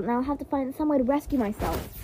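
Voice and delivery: plain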